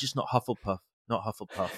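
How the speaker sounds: muttered under the breath. Retelling the hat being put on them, muttering under breath. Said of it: "I'm saying under my breath".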